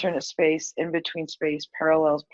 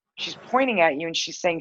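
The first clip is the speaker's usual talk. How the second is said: usual speaking voice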